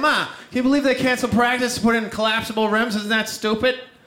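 put-on heavy Boston accent throughout. Retelling what the speaker once said to Ma, thick Boston accent. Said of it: "I just had a thick Boston accent".

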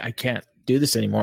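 normal talking voice

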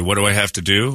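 ordinary talk

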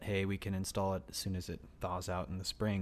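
ordinary delivery

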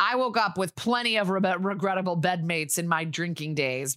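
ordinary delivery

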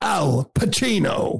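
posing disco-star showman voice. Congratulating someone, then imitating John Travolta posing in a mirror. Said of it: "that's my imitation of John Travolta".

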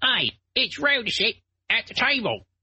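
very high-pitched put-on Cockney accent. Quoting a man at a table who has a cockney accent. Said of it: "He's got like this like cockney accent. He's like".

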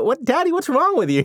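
put-on high, puzzled little-girl voice. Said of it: "she was definitely giving me a look".

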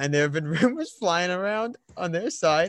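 talking through barely suppressed laughter. Sharing a coaching rumor with another speaker, laughing while talking. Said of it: "I'm sorry I'm laughing already".

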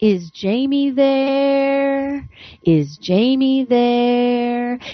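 there stretched long, very slow and drawn out. Retelling a phone voice asking for someone, imitating a voice stretching "there". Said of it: "the voice extended the word there".

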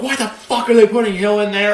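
fed-up, high-pitched yelling. Describing a dad watching his team on third down, retelling dad's yell. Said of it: "he'll be yelling like".

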